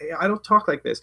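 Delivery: normal talking voice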